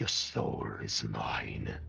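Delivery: very low, dark, creaky otherworldly voice. Game master voicing a clawed creature speaking to the players, a voice not his own. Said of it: "with this voice that clearly is not his own".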